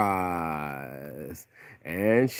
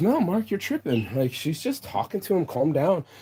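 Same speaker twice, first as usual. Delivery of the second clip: high-pitched, dismissive, reassuring tone. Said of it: "And my friend goes".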